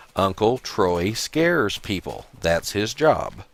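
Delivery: very slow, deliberate, drawn-out word-by-word delivery. Retelling a young man's reply about whether his uncle scares people, really slow. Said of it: "really slow".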